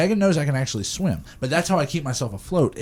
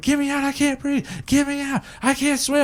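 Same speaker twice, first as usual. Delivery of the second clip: mock very high, frantic, panicked screaming; 11 semitones higher than usual. Retelling their brother being thrown into deep water, imitating brother screaming, hollering. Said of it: "he's like screaming and he's hollering".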